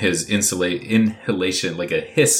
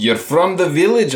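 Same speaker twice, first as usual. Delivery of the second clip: put-on Scottish accent, pitched a bit higher; 9 semitones higher, 4 dB louder than usual. Playing the character Ivan while practicing an accent, in a Scottish accent. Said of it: "Maybe he just needs to be Scottish".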